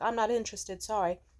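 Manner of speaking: mock courteous tone. Speaker retells a woman turning down a persistent male model, retelling a polite refusal. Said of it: "she's just politely like".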